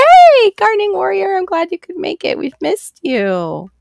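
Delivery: cheerful, excited, high, bright-pitched welcoming tone.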